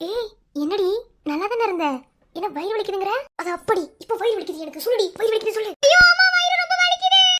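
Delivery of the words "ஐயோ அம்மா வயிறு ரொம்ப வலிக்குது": yelling in pain, much higher pitch. A student cries out to a classmate about a stomach ache, yelling in pain. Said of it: "நீ ஏன்டி கத்துற வயிறு வலிக்குது?".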